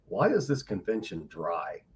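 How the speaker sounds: mock-deadpan delivery. Retelling the first thing a man said when invited to speak, deadpan. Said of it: "just deadpan".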